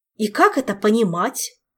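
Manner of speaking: quivering, trembling voice full of indignation. An outraged man confronts another across a table; voice trembling with indignation. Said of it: "дрожащим от негодования голосом произнес Орландо".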